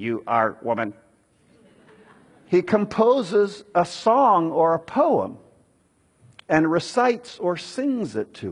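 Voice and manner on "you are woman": level, uninflected, very low monotone. Explaining how Adam first greets Eve, demonstrating what he does not do: flat monotone. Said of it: "He doesn't just say in a monotonal".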